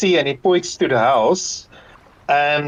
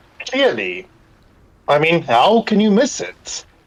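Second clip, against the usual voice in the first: dry, mocking, sarcastic tone; 3 semitones higher than usual. Told the others were not aware, replying sarcastically. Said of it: "He says sarcastically".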